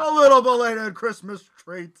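hammed-up jolly voice, loud. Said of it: "There's a bad impression of Santa Claus".

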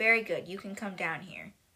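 ordinary delivery

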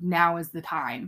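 ordinary talk, nothing marked

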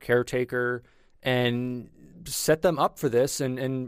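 plain

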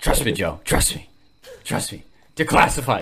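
put-on, riled-up talk show host voice. Doing an Alex Jones impression, telling Joe to trust him: Alex Jones impression. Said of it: "my Alex Jones fucking impression".

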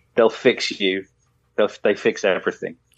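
usual speaking voice

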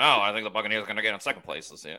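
put-on fast-talking voice. Doing Boomhauer after being asked, talking real fast. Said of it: "can you do, um, oh God, Boomhauer?".

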